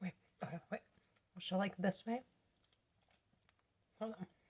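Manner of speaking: talking while chewing. Stopping mid-explanation to finish lunch, talking while chewing. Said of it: "Let me finish chewing".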